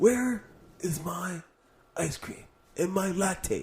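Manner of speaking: put-on half-asleep voice, slow, high and drowsy. Imitating Bernie when he's asleep: sleepy Bernie impression. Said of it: "I'm doing my Bernie when he's asleep".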